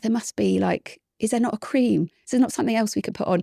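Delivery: beseeching, imploring, pleading tone. Retelling pleading with the doctor for another treatment: retelling own pleading. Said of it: "I remember kind of pleading with the doctor".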